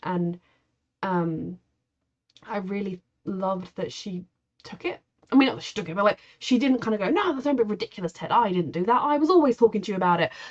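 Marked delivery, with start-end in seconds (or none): 7.1-10.3 very British put-on accent, laid on thick. Imitating a mother brushing off her son's complaint: very British accent. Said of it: "she'd had a very British accent".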